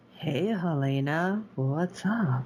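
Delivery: creepy voice, very slow and drawn out. Retelling how Gracie crept up on Helena: creepy Gracie voice. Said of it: "Gracie kinda creeping up like".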